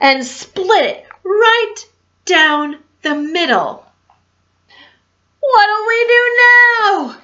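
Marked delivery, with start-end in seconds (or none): 5.4-7.1 high shouted pirate voice, yell drawn out. A pirate after lightning splits the ship's mast, yelled. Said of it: "yelled one of the pirates".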